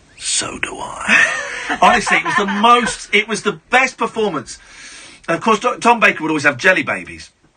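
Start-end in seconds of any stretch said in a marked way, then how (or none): 0.2-1.8 hushed, soft, close whisper. Recalling Tom Baker kneeling beside him, retelling his whisper. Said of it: "he whispered in my ear".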